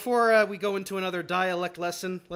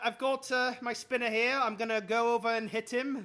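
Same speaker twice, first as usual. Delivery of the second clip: poor put-on Scottish accent, pitched up; 5 semitones higher than usual. Commentating his own move while playing, in a bad scottish accent. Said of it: "you do a worse Scottish accent than I do".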